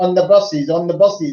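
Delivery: put-on Indian accent, called out. Retelling what a little boy in Bombay said to the speaker, in an Indian accent. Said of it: "in an Indian accent".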